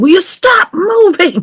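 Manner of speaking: shrill, very high, exasperated screaming yell. Retelling shouting at the screen during an episode: imitating own screaming at screen. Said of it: "I'm screaming at my screen saying".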